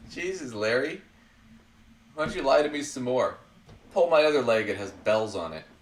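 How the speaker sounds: ordinary delivery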